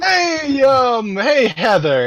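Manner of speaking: very loud, very high, talking over another voice. Calling to someone loudly over another voice that is speaking: loud, over another voice. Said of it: "he says loudly over the voice".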